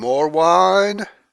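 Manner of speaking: booming, very loud, high-pitched screaming voice. Joking about Notch at the office: imitating Notch screaming. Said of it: "he's screaming".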